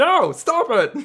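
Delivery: put-on farmer holler, very high-pitched and loud. Describing a man whose sand is being taken away, in a farmer voice. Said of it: "What was that voice?".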